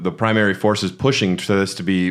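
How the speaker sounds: ordinary delivery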